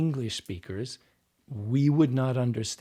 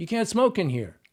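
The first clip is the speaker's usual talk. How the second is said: kind of upset, pitched-up voice; 8 semitones higher, 4 dB louder than usual. Speaker retells how an actor wanted to play a line without the accent: acting upset. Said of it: "I'm kind of upset".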